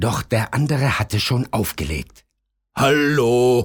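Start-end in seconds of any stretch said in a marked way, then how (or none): 2.7-3.6 calling out loudly. The pizza man calls into the phone after the caller hung up, calling out. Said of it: "rief der Pizzamann".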